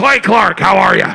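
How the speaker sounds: very loud, aggressive, in-your-face bellowing. Retelling meeting Alex Jones in line: imitating Alex Jones, very loud and aggressive. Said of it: "Very loud, very aggressive".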